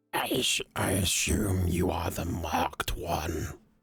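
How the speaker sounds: very gravelly, gargled, rough character voice. Recounting a scene where a barely visible figure speaks, very gravelly, gargled voice. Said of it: "he speaks in a very graveled and gargled tone of".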